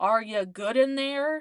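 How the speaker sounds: loud, drawn-out, blunt, unceremonious call. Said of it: "Not this man".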